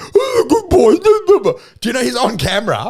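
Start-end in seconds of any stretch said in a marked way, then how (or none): 0.0-1.0 very high, loud puppy-talk dog voice. Retelling a leader on camera doing a dog voice: imitating a dog voice. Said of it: "he's in there and he's like".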